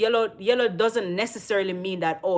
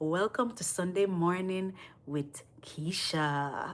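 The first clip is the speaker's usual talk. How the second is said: put-on soothing voice, much quieter; 8 dB quieter than usual. Praising Keisha's voice to her, then imitating Keisha's sweet soothing voice. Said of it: "Your voice is so soothing".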